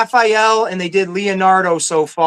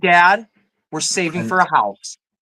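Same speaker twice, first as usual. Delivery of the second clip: put-on small child's voice. Retelling what his kid says about buying toys: imitating his daughter. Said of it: "She's like".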